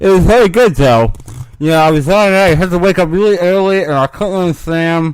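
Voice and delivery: loud, very high put-on whine, talking around a pen. Doing an impression of the absent co-host with a pen in mouth: bad Mike impression with pen in mouth. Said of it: "that's a bad Mike impression".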